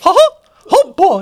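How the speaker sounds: high cartoon mouse impression. Asked to let the others hear it, the speaker does a Mickey Mouse voice. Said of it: "Let me hear it".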